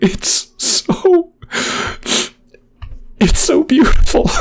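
tearful, overcome, high, whispered crying.

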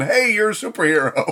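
put-on yelling. Recapping an episode, acting out a man yelling at Clark's work: imitating someone yelling. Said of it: "he's yelling".

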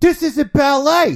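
said with conviction. Saying the line again after "try it again": said with conviction. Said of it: "I said it with more conviction".

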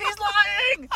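put-on child's high-pitched shrill yelling.

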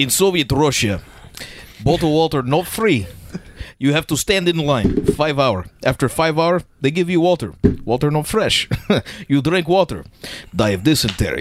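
Russian accent with articles dropped. Asked what they've got, speaker performs a bit in a Russian accent. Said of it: "I think I do an okay Russian accent".

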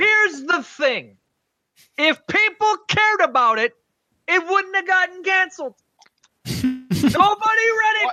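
shrill, very high yelling with a stretched delivery. Arguing a point against the others in the discussion, yelling. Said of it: "Why are you yelling?".

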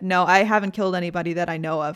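plain

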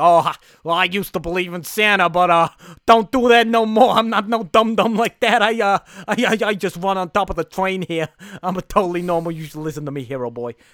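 big, loud, broad Queens-flavored hobo voice. Retelling a scene where a character lectures a kid: Tom Hanks hobo voice. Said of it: "he is loving doing this voice".

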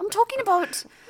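high, loud, put-on posh British accent. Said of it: "You sound so fucking posh".

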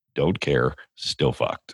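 put-on American accent. Imagining how the guy leaves every situation: imitating an American accent. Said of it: "in his American accent".

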